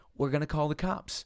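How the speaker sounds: plain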